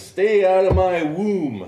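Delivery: very loud, very high, shrill, drawn-out scream. Retelling how a woman screamed at him though Secret Service stopped her, retelling a scream. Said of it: "she screamed at him".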